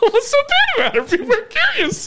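voice shooting up very high, swooping and excited. Pressing another speaker again with a nosy question: voice jumps way up in pitch. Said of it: "Why'd your voice just go up".

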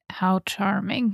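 very low, sarcastic under-the-breath mutter. Describing sneaking ahead of others, the speaker acts out a sarcastic mutter under their breath. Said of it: "kind of muttering under my breath, like sarcastically".

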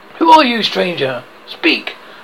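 ordinary delivery

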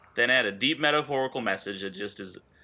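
ordinary talk, nothing marked

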